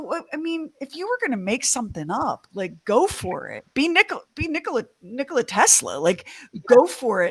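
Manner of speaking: high, mock exasperated scoff.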